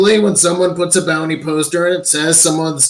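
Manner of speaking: ordinary delivery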